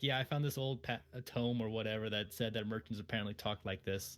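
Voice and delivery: ordinary delivery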